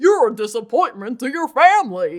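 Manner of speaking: loud, swooping, big cartoony dog voice. Imagining a cartoon character joining the special, speak in a Goofy voice. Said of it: "You like my Goofy voice?".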